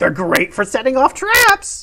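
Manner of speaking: put-on crone-like elderly woman voice. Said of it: "she just looks about you all and goes".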